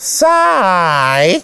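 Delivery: tiny, thin, small voice. Narrating a story, an unknown animal suddenly speaks up, thin little voice. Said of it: "zegt opeens een dun stemmetje".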